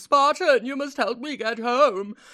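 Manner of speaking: put-on whiny old man voice. Retelling an old man's plea from a game escort mission, put-on whiny old man voice. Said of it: "such an annoying whiny voice".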